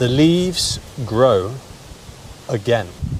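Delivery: clear delivery, every word easy to catch.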